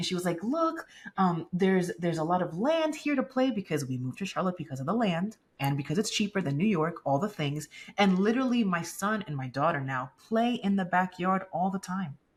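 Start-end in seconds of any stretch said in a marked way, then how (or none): 0.4-3.5 super giddy, bubbling over, climbing in pitch. Retelling a friend's excited words during a healing session: imitating someone being giddy. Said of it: "she was being super giddy".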